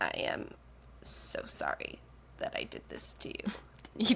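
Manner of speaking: insufferable slow, creaky, breathy drawl, half-whispered. Imitating someone's apology: imitating insufferable vocal fry. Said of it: "he is doing this like insufferable like vocal fry".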